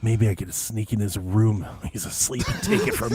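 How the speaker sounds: low murmur, half aloud. Describing a weird character talking to himself, Beetle's murmur voice. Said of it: "it's like a murmur voice".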